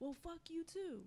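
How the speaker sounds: mock angry man's voice, cursing. Retelling being cursed out by grown men in new york: angry cursing. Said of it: "they be like".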